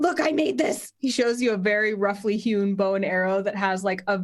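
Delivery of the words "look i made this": put-on eager, excited little boy voice. Voicing an excited halfling boy who greets adventurers: excited halfling boy voice. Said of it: "Carp is the halfling boy who's waving at you excitedly".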